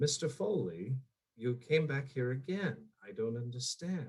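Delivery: small, soft, puzzled teacher voice. Describing a villain who doesn't yell, the speaker acts out his line: small teacher voice. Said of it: "questioning in such a small teacher voice".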